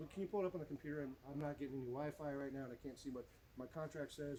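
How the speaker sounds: plain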